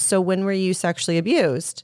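usual speaking voice

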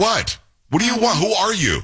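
high-pitched, irritated, fed-up annoyed voice. Retelling answering a repeated phone call, retelling an annoyed reply. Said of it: "because you're tired of it".

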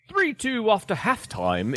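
put-on British accent. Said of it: "British accent".

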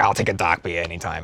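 put-on Boston accent. Imitating a parent ordering a drink, imitating a Boston accent. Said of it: "my dad's pretty bad about it".

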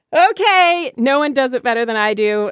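plain

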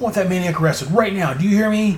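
play-acted high-pitched, angry, raving rant. Retelling the story after Rick leaves, acting out Tolliver ranting and raving. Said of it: "Tolliver starts you know ranting and raving".

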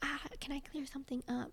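put-on whispering. Retelling what Nate said in her ear: imitating someone whispering. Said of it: "whispers in my ear".

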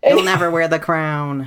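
put-on yelling, shouting upward. Voicing a character who yells up at a foe: Deb yelling up at it. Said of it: "just yells up at this thing".

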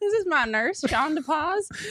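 sudden put-on Southern accent. Joking about how introducing someone as your nurse sounds, in a Southern accent. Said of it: "why'd you turn Southern all of a sudden?".

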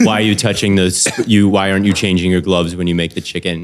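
imitated angry, deadpan delivery. Quoting a chef who critiques asmr cooking videos: imitating an angry deadpan chef.

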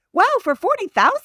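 shrill excited voice. Reacting to the other speaker's house price, shrill and excited. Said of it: "I'm getting shrilly and excited".

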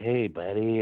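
weird put-on creepy voice. Telling how he answers when people call him, in his creepy 'hey buddy' voice. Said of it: "I do that when people call me".

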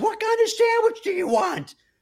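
shrill, very high top-of-the-lungs yell. Retelling a girl yelling a sandwich order to her friend; imitating someone yelling. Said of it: "Like at the top of her lungs".

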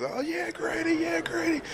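play-acted very high, rising scream at top of lungs. Retelling own screaming during the game: retelling own screaming at top of lungs. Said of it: "I was screaming at the top of my lungs".

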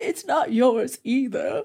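slow, tearful put-on crying voice, weepy words. Retelling a cartoon scene, imitating Jean crying as she speaks. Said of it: "she starts to cry and she goes".

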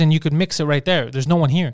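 usual speaking voice

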